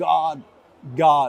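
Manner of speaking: ordinary talk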